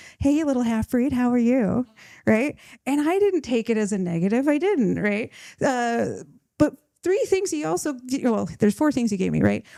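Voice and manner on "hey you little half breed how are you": mock, very loving, fond grandfatherly voice. Quoting his grandpa greeting him by his pet name, imitating a loving voice. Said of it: "in a very loving voice would be like".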